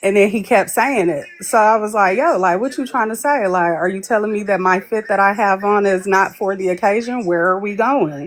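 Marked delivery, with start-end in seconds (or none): none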